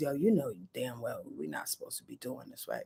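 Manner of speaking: very low, very soft, seductive, sexy murmur. Voicing Neptune as a quiet inner voice: sexy tone. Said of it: "in the sexy Sonia Marie tone".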